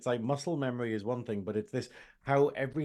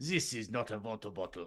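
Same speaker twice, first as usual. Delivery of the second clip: soft put-on German accent; 3 semitones lower, 7 dB quieter than usual. Complaining about a hated YouTube advert, the speaker quotes its guy: fake German accent. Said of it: "this guy doing a fake German accent".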